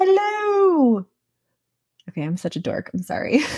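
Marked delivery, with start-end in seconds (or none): 0.0-1.1 very high pitch, slowly stretched and drawn out. You just noticed you sounded like Mrs. Doubtfire while talking about her; do the Mrs. Doubtfire voice. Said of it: "sounded like Mrs. Doubtfire".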